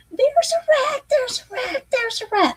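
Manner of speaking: squealing, terrified, panicked shrill scream, very high. Retelling an inmate who stepped on a rat and jumped onto his cot, retelling a high-pitched scream. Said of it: "Probably in the highest pitched voice".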